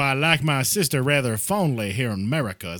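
put-on Southern accent. Arguing a point to a friend, doing an impression of someone who talks about family affection; a put-on Southern accent. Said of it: "if it's medieval times".

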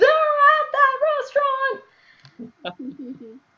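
high, loud, excited scream. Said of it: "scream at my boyfriend".

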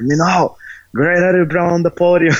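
play-acted, high-pitched, calling-out yell. Retelling a call to the podium at a competition: imitating someone yelling. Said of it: "he yells like".

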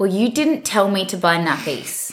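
play-acted, defensive retorting tone. Retelling a row over forgotten nappies: imitating partner's defensive tone. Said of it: "In exactly that tone".

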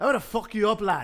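put-on very high-pitched Irish accent. Speaker plays the fighter in a mock press-conference face-off, Conor McGregor Irish accent. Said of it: "the Irish accent".

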